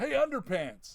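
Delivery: mock, lame, high-pitched yelled taunt. Quoting a favorite bad taunt from a movie: Clark yelling a taunt. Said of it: "when Clark yells".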